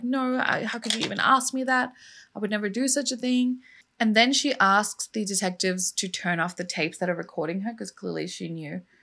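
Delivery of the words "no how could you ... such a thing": mock super-upset voice, much higher. Retelling a woman's answer when asked outright by detectives, imitating someone super upset. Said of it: "she gets super upset".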